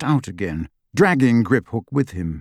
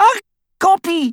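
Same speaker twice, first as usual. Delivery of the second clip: shrieking, very high-pitched screech; 3 dB louder than usual. Reading the scene, the narrator voices the reply to Hermione: Bellatrix screeching. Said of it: "screeched Bellatrix".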